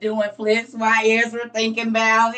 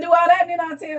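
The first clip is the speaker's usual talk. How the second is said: quick, pitched-up, passive-aggressive sarcastic brush-off; 7 semitones higher than usual. Retelling God's answer to a question: mock-sarcastic, passive-aggressive. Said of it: "sarcasm. Listen, passive aggressive".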